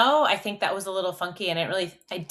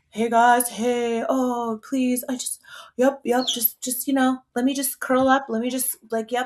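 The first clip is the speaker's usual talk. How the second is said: goofy, high-pitched silly dog character voice; 5 semitones higher than usual. Voicing another dog's inner thoughts: goofy dog inner voice. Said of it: "Phil is a little bit more goofy".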